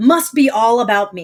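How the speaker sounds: ordinary talk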